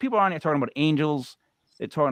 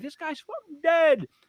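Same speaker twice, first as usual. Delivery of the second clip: very high, furious, angry yell; 11 semitones higher than usual. Retelling muting the other person and yelling to his wife: retelling a yell. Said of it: "I'm yelling at my wife".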